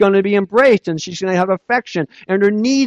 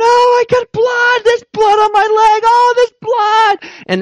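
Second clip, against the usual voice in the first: put-on very high, drawn-out, weepy crying child voice; 4 dB louder than usual. Parent retells picking her up from school, imitating Sadie crying. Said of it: "she's crying".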